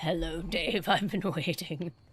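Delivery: sinister, evil demon voice. Recalling how he'd greet his roommate at home, in his best demon voice. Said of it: "I'd cast my voice on my best impression of a demon".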